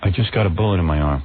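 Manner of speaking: very low, flat monotone voice. Mocking Cindy Crawford's acting in a movie scene, Cindy Crawford monotone impression. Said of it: "she talks in monotone".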